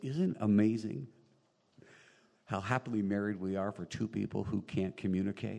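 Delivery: normal talking voice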